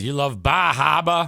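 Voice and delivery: put-on broad, thick Massachusetts Boston accent. Retelling what a man asked on seeing her Maine hoodie, imitating a Boston accent. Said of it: "in his best Boston accent".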